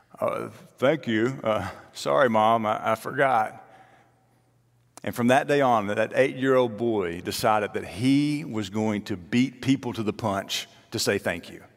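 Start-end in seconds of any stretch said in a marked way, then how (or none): 0.2-3.6 words muffled by food being chewed. Retelling a boy's reply to his mom: imitating talking with mouth full. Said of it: "with a mouthful of food".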